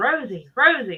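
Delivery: normal talking voice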